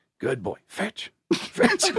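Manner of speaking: whispered pleading. Retelling pleading with a dog at a judged test: imitating a whispered plea. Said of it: "So you just whisper plead?".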